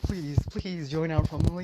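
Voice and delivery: mock earnest pleading, begging over and over. Acting out people begging a character to join: imitating begging. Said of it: "begging for Bill now".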